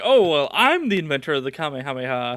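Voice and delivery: ordinary talk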